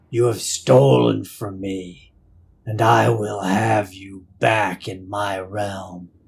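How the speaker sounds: voice that resounds and echoes, reverberating. Voicing a presence that scratches at the party's minds: reverberating voice. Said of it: "you hear and feel this voice reverberate through you".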